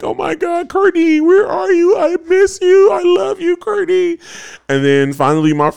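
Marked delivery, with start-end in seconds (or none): 0.0-4.2 very high, acted sobbing wail, crying scream. Retelling searching for battle partner Courtney, imitating crying and screaming. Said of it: "just crying and screaming like".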